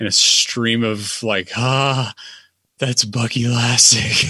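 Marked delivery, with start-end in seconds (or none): 1.6-4.3 mock awed, starstruck, childlike wonder. Retelling a friend spotting Bucky Lasek: imitating Dalton's childlike wonder. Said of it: "the most childlike wonder just wash over him".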